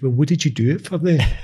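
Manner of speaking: broad put-on Glaswegian accent. Voicing a wee inner part that's very glaswegian, in a full glaswegian accent. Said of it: "that was the full Glaswegian accent there".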